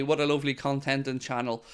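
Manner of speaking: ordinary talk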